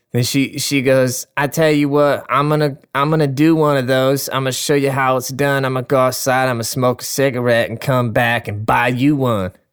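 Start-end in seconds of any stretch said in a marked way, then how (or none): 1.4-9.5 put-on ratchet girl voice.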